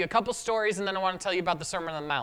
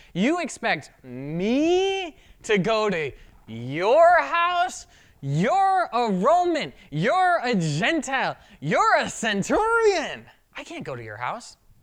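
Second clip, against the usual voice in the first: heavy sarcasm, slow, swooping, word me drawn out; 4 semitones higher, 4 dB louder than usual. Acting out a reply refusing to visit a soldier's house: imitating a sarcastic tone. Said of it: "like a little bit of sarcasm".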